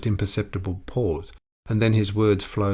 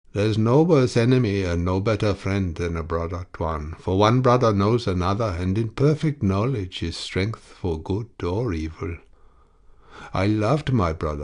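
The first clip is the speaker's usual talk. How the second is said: plain reading voice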